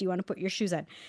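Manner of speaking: mock gentle, soft, calm, even-keeled tone. Retelling how a woman spoke to a barefoot three-year-old, imitating a calm question. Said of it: "she calmly says".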